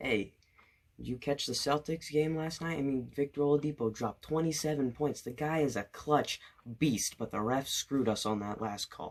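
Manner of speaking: hushed, half-whispered chatter. Retelling leaning over to a friend in class: imitating own half-whisper. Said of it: "I whisper".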